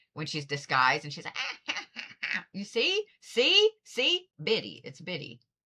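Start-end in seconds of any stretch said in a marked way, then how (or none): 1.4-2.5 mock, hushed, breathy whispered cackle of a crone. Speaker describes a little old cackling figure: Evil Queen cackle.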